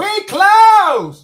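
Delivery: shrill, booming, very loud high yell, "close" dragged out. Retelling how a worker at a truck yelled out: imitating someone yelling. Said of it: "just yells out".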